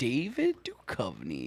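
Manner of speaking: silly, goofy, swooping sing-song delivery. Naming an actor in a chat about movies: goofy delivery. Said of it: "Just the way you said that was goofy".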